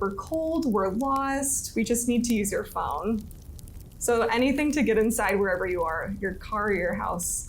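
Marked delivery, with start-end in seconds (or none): none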